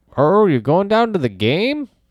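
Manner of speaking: put-on heavy Western Minnesota accent. Quoting characters from a Coen Brothers film, in a thick Minnesota accent. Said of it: "thick Western Minnesota accents".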